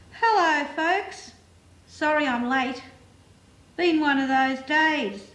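put-on tipsy words slurring together. Reading fiction aloud, voicing a drunk photographer's greeting in drunk, slurred speech. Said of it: "The words slurred together".

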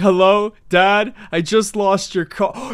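mock sobbing, put-on crying voice. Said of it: "Starts sobbing".

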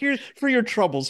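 broad, thick Irish brogue, very high-pitched. Retelling grandma offering cops $100 bills in the courtroom: imitating Mrs. McKay's thick Irish accent. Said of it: "Real thick Irish accent".

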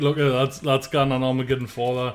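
ordinary talk

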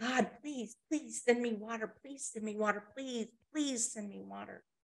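mock desperate pleading. Telling a story about a man in the heat, acting out his desperate begging. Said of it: "And he's begging".

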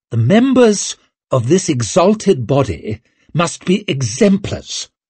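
sharply snapped. Reading a story, Orso addresses the silent lords, snapped. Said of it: "He is the High King of the Union".

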